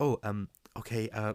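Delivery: put-on stuttering voice. Describing an actress's repeated role: Ayo Edebiri stuttering impression. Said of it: "so stuttering".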